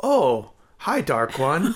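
put-on odd unplaceable accent, very slow, stilted, words drawn out. Imitating a film character who speaks like Tommy Wiseau: imitating Valeria like Tommy Wiseau. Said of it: "I could definitely see her be like".

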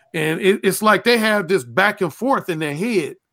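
ordinary delivery

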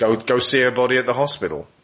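put-on gruff old detective voice. Explaining how a scene's detective should sound, doing a gruff old detective voice. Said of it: "this gruff old detective who comes in and goes".

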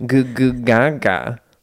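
put-on baby babbling voice. Reading a question, acting out the baby's reply as baby babble. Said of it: "And he's all".

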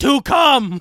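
high, loud yell. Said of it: "And then just that video".

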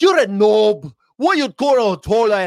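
very high, loud, put-on Northern Irish accent. Quoting a guy from Northern Ireland the speaker used to know: faked Northern Irish accent. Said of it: "I used to know a guy from Northern Ireland".

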